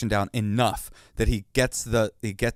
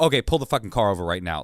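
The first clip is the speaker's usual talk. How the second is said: acted angry snap, much faster. Retelling an argument with a driver, acting out snapping angrily at him. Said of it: "I I'm like snapping".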